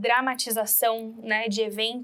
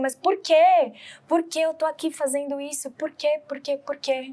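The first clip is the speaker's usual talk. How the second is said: sobbing, furious, tearful outburst; 4 semitones higher than usual. Retelling how a husband and wife reacted to a loss: imitating angry crying. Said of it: "ficam com raiva, ficam chorando, eles ficam".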